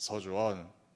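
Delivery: slightly dropped, deep, stern warning tone. Showing how they call a disobedient child's name: slightly lowered voice. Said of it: "이렇게 목소리 조금만 깔아도".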